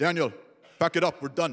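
put-on English spoken with an Israeli accent. Retelling the end of a trade show day, the speaker quotes Yariv's Israeli accent. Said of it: "with his Israeli accent".

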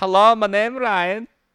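very high, loud, drawn-out fake Eastern European accent. Suggesting how the other speaker could fake an accent as a show guest, Borat-style accent. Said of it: "That's not Swedish, dude. I'm pretty sure Borat is some kind of Eastern European".

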